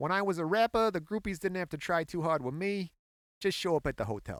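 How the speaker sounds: put-on words spoken in a Boston accent. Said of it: "I wonder if I can do a Boston accent".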